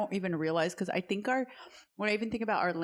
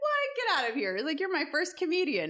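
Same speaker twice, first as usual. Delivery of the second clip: very high, suddenly excited, perked-up surprise, acted out; 9 semitones higher than usual. Comedian retelling a psychiatrist's reaction, retelling a perked-up reaction. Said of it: "he like perked up".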